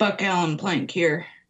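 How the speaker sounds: rough, gruff voice. Retelling a call from a mysterious number, imitating Buck Plank's gruff voice. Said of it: "this kind of gruff voice answered".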